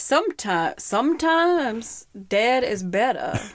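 attempted, put-on Maine accent. Urged to try it, repeating his quoted line in a Maine accent. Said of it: "Can you do it?".

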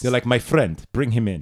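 put-on, mock Nigerian accent. Joking about Nigeria with another speaker, she slips into a Nigerian accent. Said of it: "That's a Nigerian accent".

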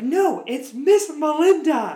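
upset yelling, very high-pitched, very slow and drawn-out. Retelling yelling at a kid in class: imitating own past yelling. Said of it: "And so I started yelling at him".

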